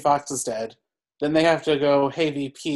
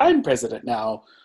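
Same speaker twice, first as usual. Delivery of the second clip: put-on gleeful villain voice, much lower pitch; 4 semitones lower than usual. Speaker recapping a film scene where Richard Jenkins is sworn in: mock-gleeful Richard Jenkins impression. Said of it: "is like gleefully like".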